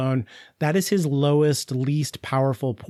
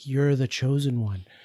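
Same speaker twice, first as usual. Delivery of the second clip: put-on whisper. Retelling what Jenova says into a character's ear: Jenova whispering. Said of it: "Jenova whispering in his ear".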